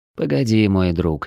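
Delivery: ordinary delivery, nothing marked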